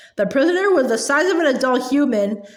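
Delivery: ordinary delivery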